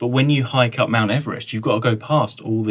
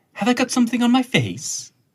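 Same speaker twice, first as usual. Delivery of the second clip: very high, swooping, swinging character voice; 12 semitones higher than usual. Showing another speaker an impression of Gwen from Torchwood. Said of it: "I can do, um, Gwen from Torchwood".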